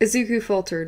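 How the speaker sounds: plain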